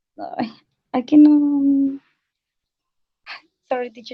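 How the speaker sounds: nervous, anxious tone. Answering a teacher's question about a movie, nervous. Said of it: "it's because I am very nervous".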